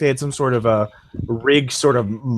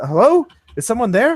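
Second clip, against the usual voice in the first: much higher woman's voice, heard over a pa; 11 semitones higher than usual. The game narrator voices a stranger heard over the ship's pa, in a woman's voice. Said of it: "it's a woman's voice".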